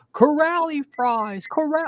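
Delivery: put-on very high, shrill child's cheering yell. Retelling how a kid at a game kept shouting: imitating a kid yelling. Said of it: "He just would yell".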